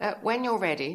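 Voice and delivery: hoity-toity voice. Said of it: "she says in this hoity-toity voice".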